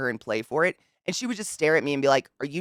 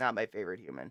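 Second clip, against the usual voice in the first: usual speaking voice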